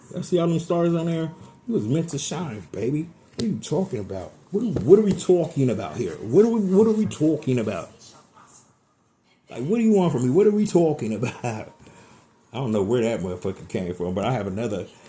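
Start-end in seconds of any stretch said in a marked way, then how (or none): 3.4-11.7 thick-sounding, put-on New York accent. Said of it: "Is that my New York accent?".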